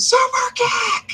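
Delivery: very high screamed shout. Retelling screaming along while watching a show: retelling own screaming. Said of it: "I just start screaming".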